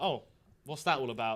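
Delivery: ordinary delivery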